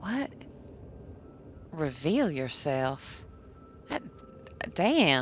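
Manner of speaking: hushed, whispered mutter under the breath. Peach catches part of a call and mutters to Sal, under breath. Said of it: "says under breath to Sal".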